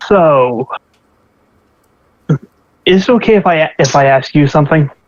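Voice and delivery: hushed character voice. Dimitri walks beside Zareen while they travel, Dimitri, hushed voice. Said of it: "sort of in a hushed voice".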